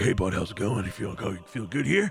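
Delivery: mildly scared, frightened character voice. Voicing a scared Reginald greeting a player in the darkness: scared NPC voice. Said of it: "kinda scared".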